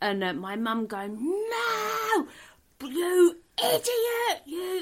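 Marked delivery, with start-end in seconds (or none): 1.2-4.8 very high, very slow, drawn-out, scolding screamed "no". Retelling a mother screaming at a drunk father: imitating mum screaming. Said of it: "screaming at my dad".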